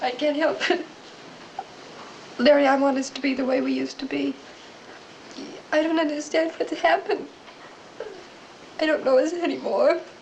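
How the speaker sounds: tearful, sobbing, pleading voice. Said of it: "Please don't cry".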